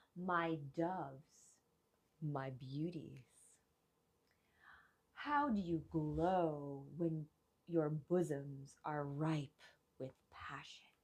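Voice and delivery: grand, thundering god voice, glow drawn out. Narrator retelling a myth voices Zeus addressing the goddesses, booming Zeus voice. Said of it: "his booming voice around them saying".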